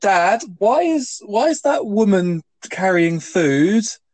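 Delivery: mock loud kid voice. Complaining about a noisy kid behind the seat: imitating a kid asking loudly. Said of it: "and that voice that they do".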